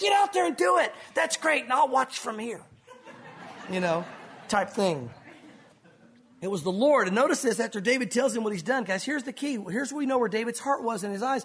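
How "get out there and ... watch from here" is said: fired-up cheering. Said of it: "He was fired up".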